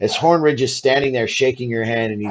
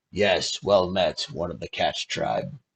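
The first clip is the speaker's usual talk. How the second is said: put-on very low, gruff, old-sounding turtle voice; 7 semitones lower, 8 dB quieter than usual. A narrator voices a turtle greeting the player's cat-folk character, gruff turtle voice. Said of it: "Both of them have very gruff voices".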